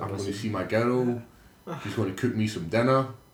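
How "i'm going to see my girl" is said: usual speaking voice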